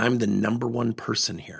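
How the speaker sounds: ordinary talk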